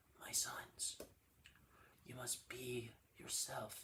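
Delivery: slow, whispered, wise-teacher voice. Recalling the cartoon characters' voices, the speaker does Master Splinter voice. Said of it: "Then Master Splinter just like".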